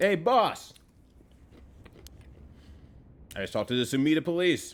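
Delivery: talking with mouth full. Snacking on candy corn and peanuts, the speaker talks with mouth full. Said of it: "I'm gonna wait till I finish my mouthful".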